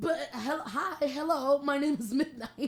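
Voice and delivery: high, loud, slow, flustered and surprised, blurted out. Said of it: "I was like".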